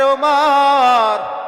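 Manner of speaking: urgent, pleading, loud call, drawn out long.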